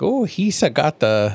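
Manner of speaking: very slow, dragged-out goofy cartoon creature voice. Retelling what a hidden figure says in an episode: Jar Jar voice. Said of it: "oh, that's Jar Jar".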